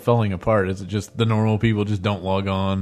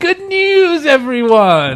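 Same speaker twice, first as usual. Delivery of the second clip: very high, shrill, booming, swooping sing-song exclamation; 9 dB louder than usual. Picturing a small pet that runs around quoting: Professor Putricide voice. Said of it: "a little Professor Putricide that just runs around and goes".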